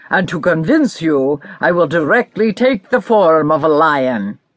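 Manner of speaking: somewhat stern ogre voice, mild severity. Narrator reads the ogre's reply to the cat, somewhat stern ogre voice. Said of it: "which belonged to an ogre".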